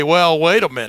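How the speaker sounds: ordinary talk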